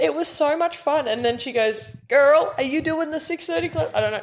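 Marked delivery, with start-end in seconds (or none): 2.1-3.9 put-on casual, pitched-up American accent. Retelling what a friend said at the gym, in an American accent: American-accent Bronte impression. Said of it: "She didn't have an American accent".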